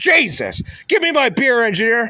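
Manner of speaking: shouted, worked-up rant. Ranting about people met at detox, then yelling at the engineer. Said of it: "I'm sorry for yelling".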